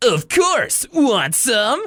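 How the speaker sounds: very high, slow, drawn-out dubbed anime voice. Imitating Mister Ratburn's line: dubbed anime character voice. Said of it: "he sounds like a dubbed anime character".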